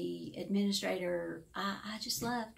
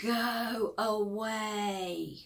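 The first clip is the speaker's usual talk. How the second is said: big booming voice, "go" drawn out; 3 dB louder than usual. Speaker knocking on a grumpy resident's door, retelling the reply in a big booming voice. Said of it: "this big booming voice said".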